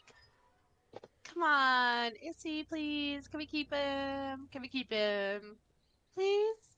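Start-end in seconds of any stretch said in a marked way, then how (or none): 1.2-6.6 high, slow, pleading whine. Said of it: "she's gonna run over and be like".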